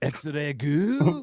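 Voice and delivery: shocked, astonished, really surprised tone. Asked to say the name again in the voice, really surprised. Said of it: "say it as if you're really surprised to see her".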